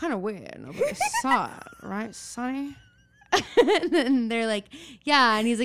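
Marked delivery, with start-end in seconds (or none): 0.0-2.8 put-on old-timey detective voice, slow and swooping. Retelling what a man said to the girls about their memorial: old-timey detective voice. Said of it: "he's talking like an old timey detective".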